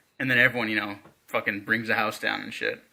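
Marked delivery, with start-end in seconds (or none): none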